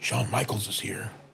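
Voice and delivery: very hushed half-whisper, barely above a breath. Retelling a kid's phone call to his coach: retelling a half-whisper. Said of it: "He's whispering".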